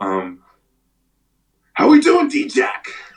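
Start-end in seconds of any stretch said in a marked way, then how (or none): 1.7-2.9 very high, slow voice, stretched way out. Imitating the coach's greeting when he picks up the phone: Coach Stud impression. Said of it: "I'm gonna try to do Coach Stud".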